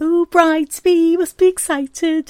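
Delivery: put-on very high, loud, drawn-out, poor Liverpool accent. Retelling what a woman said to the bride-to-be, slipping into a Liverpool accent. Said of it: "that's Liverpool".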